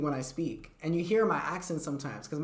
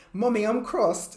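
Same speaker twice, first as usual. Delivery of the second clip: put-on little kid's British accent; 6 semitones higher, 6 dB louder than usual. Retelling what a little boy from new jersey would say, in a british accent. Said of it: "speaking with a British accent".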